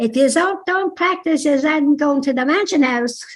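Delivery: put-on Dublin accent. Retelling what a dance teacher used to say: imitating Lily Comfort's Dublin accent. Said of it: "she had a real Dublin accent".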